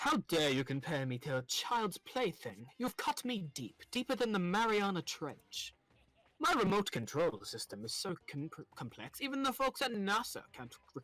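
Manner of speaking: put-on pompous, puffed-up British accent, slow and drawn out. Voicing a character's lines while playing: pompous British voice for Monokuma. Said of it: "the voice I did for him".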